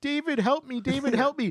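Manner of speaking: acted very high sobbing, weepy crying pleading. Retelling how he called to David for help in a grease dumpster: imitating someone crying. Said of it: "he starts crying like".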